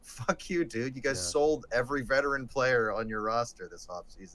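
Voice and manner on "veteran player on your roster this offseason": normal talking voice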